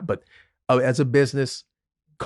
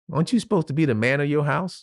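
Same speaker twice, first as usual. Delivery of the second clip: put-on young girl's voice, higher; 3 semitones higher than usual. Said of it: "That's saying it like that".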